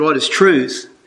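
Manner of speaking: ordinary talk, nothing marked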